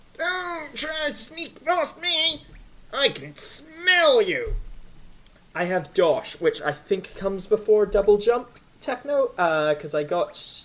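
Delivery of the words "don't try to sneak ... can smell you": strained, very high, slow, drawn-out creature voice. Player voicing the Leg Eater's dialogue in a game, Leg Eater voice. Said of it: "I'm going to commit to this voice. It's going to destroy my vocal cords".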